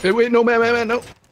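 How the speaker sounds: high, loud, panicked shout.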